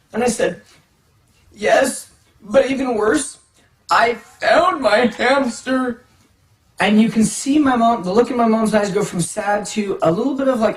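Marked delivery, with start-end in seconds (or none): 1.6-6.1 very slow, fake weepy pleading voice. Retelling telling a parent about a found hamster: imitating own forced tearful voice. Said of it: "I'm trying to get more tears".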